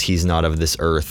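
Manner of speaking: ordinary delivery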